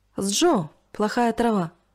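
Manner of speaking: ordinary delivery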